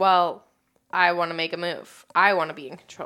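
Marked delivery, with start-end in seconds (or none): none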